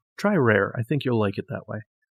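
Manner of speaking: ordinary talk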